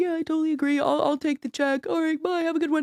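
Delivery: high agreeable sitcom-character voice. Acting out a calm breakup reply from Seinfeld: imitating Seinfeld breakup scene. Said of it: "Please tell me you use that voice".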